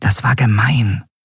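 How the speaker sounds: whispering. A character whispers a remark to a friend: whispered. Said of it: "flüsterte Nelen ihrer Freundin zu".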